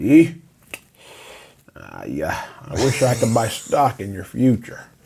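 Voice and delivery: put-on drawling Southern accent. Retelling what his coach said to him after he got cut, Southern drawl. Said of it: "Southern draw accent".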